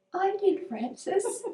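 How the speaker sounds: tiny, very small, very high voice. Retelling answering Francis about the tea, in a very small voice. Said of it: "with a very small voice".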